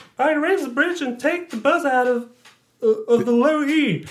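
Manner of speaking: high-pitched put-on woman's voice. Reading a scripted scene aloud on a second take, speaking the woman's line: female voice. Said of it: "Du hast eine ganz tolle Frauenstimme".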